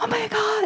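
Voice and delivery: play-acted thrilled outburst, very high-pitched and excited. Retelling a mother's reaction on the phone: imitating an enthusiastic exclamation. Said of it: "she said it with such enthusiasm".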